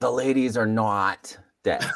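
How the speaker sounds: slow, drawn-out New Jersey voice. Showing another speaker how to read the line: Jake voice. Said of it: "You have to do the Jake voice".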